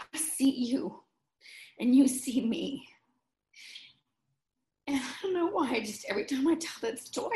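voice welling with emotion. Speaker tells a story about two coworkers giving her their cards, choked up. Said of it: "I just get so choked up".

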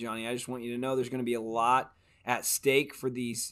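ordinary delivery

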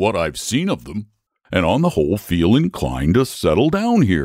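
ordinary delivery

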